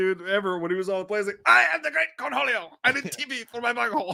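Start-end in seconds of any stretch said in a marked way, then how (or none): 1.5-4.1 very high-pitched, full cartoon voice. Retelling the greatest Cornholio scene on the plane: Cornholio voice. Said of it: "that was also the greatest Cornholio scene".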